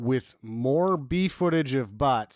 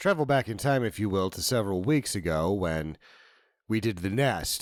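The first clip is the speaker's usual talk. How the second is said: put-on radio announcer voice, lower pitch; 5 semitones lower than usual. Starting a segment right after announcing the switch: radio voice. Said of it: "I'm going to use my radio voice now".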